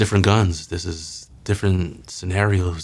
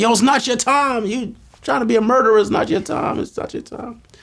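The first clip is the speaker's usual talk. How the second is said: shrill, very high screaming; 4 dB louder than usual. Retelling what everyone screamed in the car: retelling a scream. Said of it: "So we all screaming in the car".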